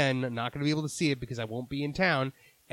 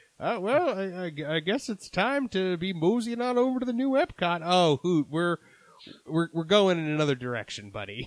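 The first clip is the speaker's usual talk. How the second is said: put-on old prospector voice, higher, "I" stretched; 5 semitones higher than usual. In a bit about Epcot, doing the Hoot Gibson voice. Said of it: "my Hoot Gibson voice is like an old prospector".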